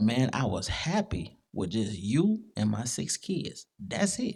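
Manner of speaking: quavering, trembling voice with swooping pitch. Retelling a husband's words from a YouTube show: imitating a trembling voice. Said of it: "you hear the trembling in his voice".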